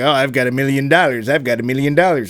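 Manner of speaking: put-on old Hollywood movie actress voice. Quoting a character in a film: Jane Russell impersonation. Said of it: "my incredible impersonation of Jane Russell".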